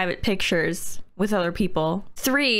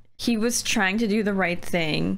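normal talking voice

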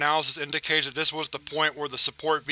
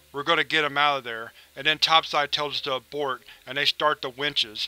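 plain

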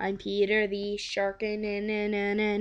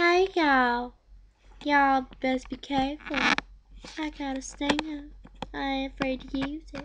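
high, folksy talking cartoon bumblebee voice; 5 semitones higher, 4 dB quieter than usual. Retelling a cartoon scene, imitating the Family Guy Talking Bee voice. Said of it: "And then he starts going".

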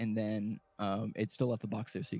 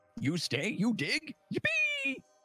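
put-on eager, very high, sing-song baby-talk chirp. Sign-waving mutant tells the player to stay and dig, cheerful little mutant voice.

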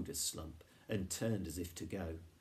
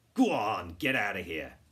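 snarling, very loud voice; 9 dB louder than usual. Narrator reading as Grumex, who notices Lupus and orders him off: snarling. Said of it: "he snarled".

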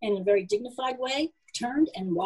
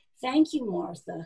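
plain reading voice

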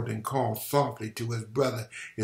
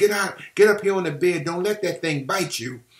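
shrill, high, loud scream; 7 semitones higher, 6 dB louder than usual. A mother calls to her daughter to get up on the bed, screaming. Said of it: "the woman screamed".

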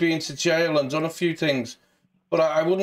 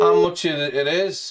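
usual speaking voice

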